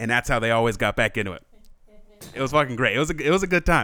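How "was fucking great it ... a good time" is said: ordinary talk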